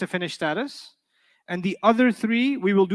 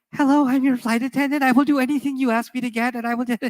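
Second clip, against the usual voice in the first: fearful, anxious-to-please voice, pitched up; 5 semitones higher than usual. Imitating flight attendants who are scared to lose their job: imitating a scared flight attendant. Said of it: "really scared to lose their job".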